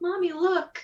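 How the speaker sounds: put-on high-pitched small child's voice. A game master voices a little kid spotting the strange party: little kid voice. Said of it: "a little kid who stops and he's like".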